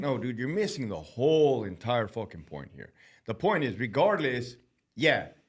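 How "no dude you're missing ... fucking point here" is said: plain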